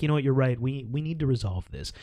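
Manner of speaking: put-on flat, deadpan delivery. Retelling how the kids answered in the principal's office, imitating a deadpan reply. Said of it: "just deadpan like".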